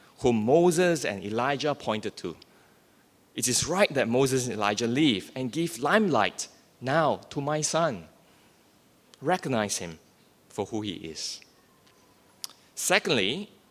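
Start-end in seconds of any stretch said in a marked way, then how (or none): none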